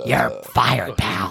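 put-on villainous voice, rough, creaky, rasping. Doing an impression of Vince McMahon: Vince McMahon impression. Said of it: "you're getting better at it".

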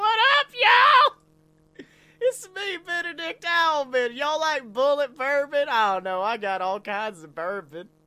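put-on high, swooping, drunk owl voice. Voicing a dumb, drunk party owl greeting everyone: dumb drunk party owl voice. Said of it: "He's just like".

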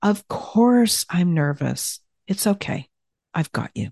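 comforting, reassuring and understanding. Teaching how to face fear, demonstrating what to say to yourself: comforting and understanding. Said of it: "that tone of comforting and understanding".

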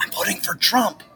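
quiet whisper. Retelling how a voter answered during the last election, retelling a whisper. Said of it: "why are you whispering?".

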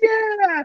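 very high-pitched, bright cheering.

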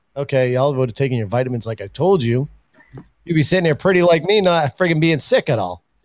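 normal talking voice

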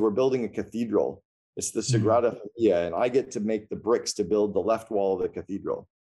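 ordinary delivery

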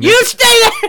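shrill, very high, very loud screaming shout. Describing Nikki A.S.H. shouting at another woman outside her pod, imitating Nikki A.S.H. shouting. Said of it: "screaming and shouting at her".

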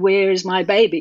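ordinary talk

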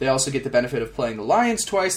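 ordinary talk, nothing marked

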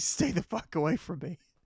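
acted screaming. Retelling a fall, warning a relative to stay away: imitating own scream. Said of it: "they just hear me screaming".

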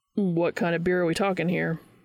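usual speaking voice

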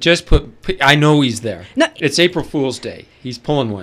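very loud, demanding put-on voice. Playing the boss on the phone, asking for johnson: put-on boss voice.

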